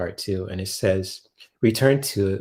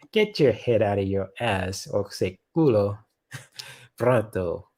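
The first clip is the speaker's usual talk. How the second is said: bad put-on Spanish accent, played for laughs. Reading a card on a live stream, joking in a put-on spanish voice. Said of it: "I'm using my, uh, Spanish, uh, voice".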